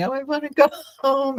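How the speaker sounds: acted, high, tearful crying young child's voice. Retelling praying to go home as a child: imitating own childhood crying.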